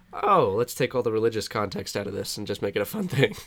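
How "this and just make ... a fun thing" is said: ordinary talk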